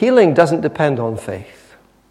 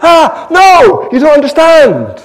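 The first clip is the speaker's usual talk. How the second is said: very high, loud, urgent pleading shout. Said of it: "he goes".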